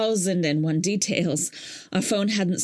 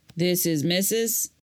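wary, doubtful, suspicious tone. Ricardo, on the phone, questions the widow calling him, suspicious. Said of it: "He sounded suspicious".

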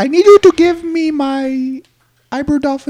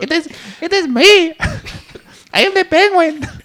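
put-on Mexican accent in a penguin voice; 4 semitones higher than usual. Playing a penguin guest on the show: mexican accent.

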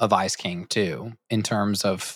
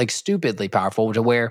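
ordinary delivery

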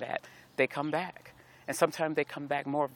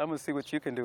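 ordinary talk, nothing marked

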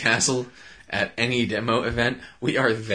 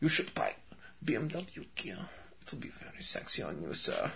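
whispered, sultry, hot-sounding German accent; 3 semitones higher, 14 dB quieter than usual. Imagining a saleswoman from BMW headquarters pitching to a customer: hot German voice. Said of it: "she probably got this hot German voice".

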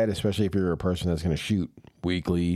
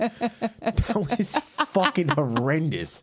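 very high, slow words laughed through; 10 semitones higher than usual. Telling another speaker their joke was horrendous, laughing while talking. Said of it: "Then why are you laughing?".

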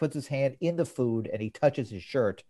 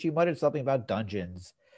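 ordinary talk

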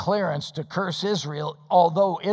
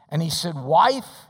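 ordinary talk, nothing marked

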